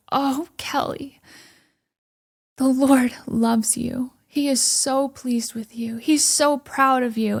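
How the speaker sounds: tearful voice, crying and weeping through the words. Retelling a woman who hugged her and spoke to her: imitating someone weeping. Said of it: "she starts weeping and she goes".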